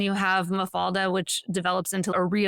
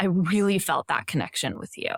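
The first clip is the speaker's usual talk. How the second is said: sweet, tender, gentle tone; 2 semitones lower than usual. Retelling what a man said to him afterwards, mimicking a very soft, tender voice. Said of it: "in this very soft, tender voice".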